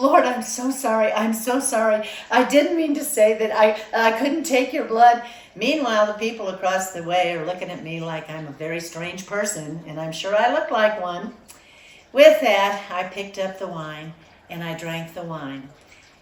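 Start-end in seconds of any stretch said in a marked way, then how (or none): 0.0-5.2 sobbing, tearful, weeping delivery. Retelling a tearful apology to the Lord: retelling own weeping apology. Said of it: "I went into outrageous weeping and crying".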